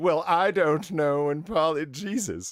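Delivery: slow, scornful, dismissive, contemptuous delivery. Urged to redo a recalled reply about a late arrival, now with mock contemptuous disdain. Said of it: "a little bit more contemptuous disdain".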